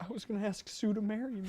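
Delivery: tearful, crying while talking. Confessing to coworkers after being told to leave: crying while talking. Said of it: "are you crying?".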